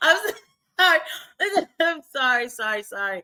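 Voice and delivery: talking while words break up into laughter. Apologizing after bursting out laughing at another speaker's look: laughing while talking. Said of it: "I had to bust out laughing".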